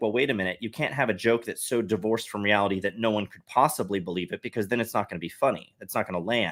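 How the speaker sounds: usual speaking voice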